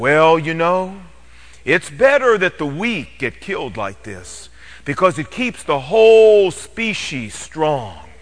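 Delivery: deep, reassuring, assuring bass documentary narrator voice. Retelling an announcer's comment on the antelope, the speaker imitates a deep, assuring bass voice. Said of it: "in this very deep, assuring bass voice says".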